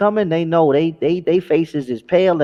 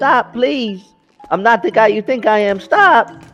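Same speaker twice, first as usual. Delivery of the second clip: put-on, high, tearful, sobbing, pleading tone; 5 semitones higher than usual. Retelling how a man begged while being attacked: imitating someone crying. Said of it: "The guy was crying".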